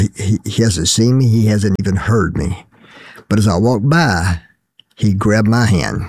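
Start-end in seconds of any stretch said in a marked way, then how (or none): none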